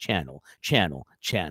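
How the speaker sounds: homemade fake echo effect made with the voice. Welcoming viewers without a soundboard, doing a fake echo effect by voice. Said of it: "I gotta do my own, you know, voice effects".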